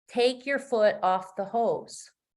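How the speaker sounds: ordinary delivery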